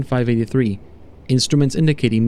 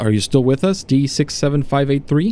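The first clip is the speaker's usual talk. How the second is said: plain reading voice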